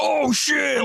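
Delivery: very high startled yelp.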